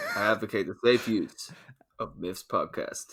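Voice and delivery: fake, put-on American accent, very deep and low. On a podcast segment, doing a bit in a put-on american accent. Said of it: "the American accent".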